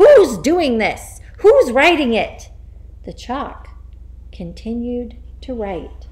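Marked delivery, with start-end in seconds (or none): 0.0-2.5 very loud, shrill, swooping, shaken yelling. The Trunchbull, shaken by the invisible writing, yells at nobody in particular. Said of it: "Then she yelled at nobody in particular".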